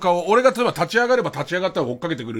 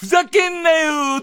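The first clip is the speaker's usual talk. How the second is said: very high put-on actress voice; 10 semitones higher than usual. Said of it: "ずーっと[name]のモノマネで".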